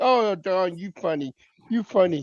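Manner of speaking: mock laughing while speaking. Retelling how everybody fell for the jokes: imitating people laughing while talking. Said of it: "start laughing like".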